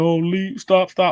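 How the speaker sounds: fake whining. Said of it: "crying and".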